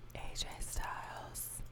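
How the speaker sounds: very soft, slow whisper. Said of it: "I whispered".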